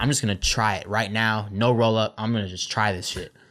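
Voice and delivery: ordinary talk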